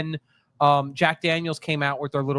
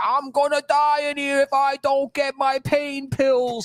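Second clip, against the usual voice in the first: play-acted very high, drawn-out shrieking scream; 11 semitones higher than usual. Retelling a line from a reality show: imitating someone screaming.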